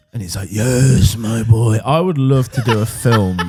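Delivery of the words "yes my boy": raised, dark evil-overlord villain voice. Imitating Walt Disney as an overlord in a bunker: Emperor and Voldemort mix voice. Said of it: "a mix between the Emperor from Star Wars and Voldemort in, in, in that e-, impersonation".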